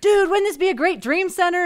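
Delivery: mock fired-up enthusiasm. Retelling a visitor's reaction on a house tour: imitating someone excited. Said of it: "he's all excited about it".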